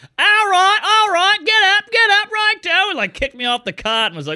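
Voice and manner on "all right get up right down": put-on British accent, slipping, much higher, louder, slower. Retelling a friend's British mom ordering him off the cot: British accent that falls apart. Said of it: "Her accent really came apart at the end there".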